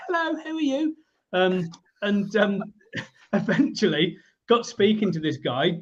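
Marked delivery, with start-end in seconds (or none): 0.1-1.0 put-on very high-pitched, small child voice. Recalling being twelve and climbing up to a car window to greet a man: little kid's voice. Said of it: "This little sort of kid's voice".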